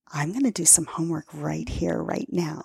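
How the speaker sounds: soft, hushed, secretive half-whisper. Retelling what was half-whispered to a partner on the hotel bed: retelling a half-whisper. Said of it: "I whisper to him".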